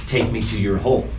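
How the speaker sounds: plain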